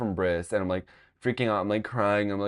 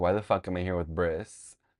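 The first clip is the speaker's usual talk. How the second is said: acted-out fed-up, exasperated annoyance; 2 semitones lower than usual. Speaker recounting a ride in eighth grade, retelling being fed up. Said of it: "I'm like so fed up because I'm like".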